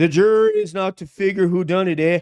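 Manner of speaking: put-on Canadian accent with "eh". Reading another person's text aloud, in a Canadian accent. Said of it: "I'll read his thing with a Canadian accent".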